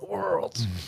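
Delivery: put-on high old grandpa voice, worlds stressed. Saying one word for emphasis like an old grandpa: old grandpa voice. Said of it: "I like to say it like an old grandpa".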